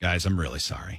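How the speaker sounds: mock deeply solemn, most somber grave tone. Retelling what Steve said during the break, imitating Steve's somber tone. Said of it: "in a most somber tone".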